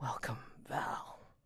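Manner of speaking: hushed, close whisper. Voicing a character greeting a player by name: whispering. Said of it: "as Kemuel whispers to you".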